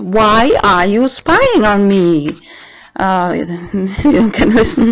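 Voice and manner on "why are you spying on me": acted-out scream, re-enacted yell. The speaker retells confronting someone they felt was spying: retelling a scream. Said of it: "And I screamed".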